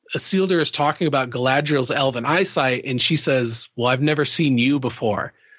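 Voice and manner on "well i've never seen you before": plain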